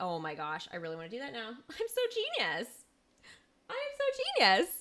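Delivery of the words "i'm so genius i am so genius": very high, thrilled, excited gushing, swooping pitch. Speaker getting carried away by their own idea, excited. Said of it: "I'm getting so excited".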